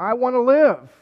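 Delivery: very loud, high scream. Retelling a movie scene, the speaker is imitating Burt Reynolds screaming. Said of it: "comes Burt Reynolds screaming".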